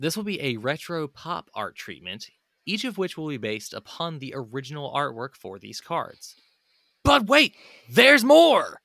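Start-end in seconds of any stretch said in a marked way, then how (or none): 7.0-8.6 loud, shrill infomercial host voice. Presenting new card art treatments, switching into an infomercial host voice. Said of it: "You've turned into an infomercial host".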